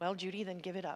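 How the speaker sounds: softly spoken. Recounting words said beside the speaker to judy, very quiet. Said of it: "very quietly said".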